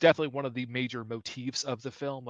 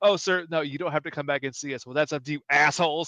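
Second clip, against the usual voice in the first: put-on snide tone, louder; 2 semitones higher, 4 dB louder than usual. Retelling a film character's remark to the cops: imitating a snide remark. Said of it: "This little affectation and snide remark he says at the cops".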